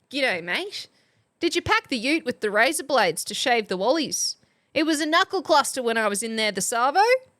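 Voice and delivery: broad, exaggerated Australian accent. Reading a chat submission for the most Australian sentence: exaggerated Australian accent. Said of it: "That sounded pretty Australian".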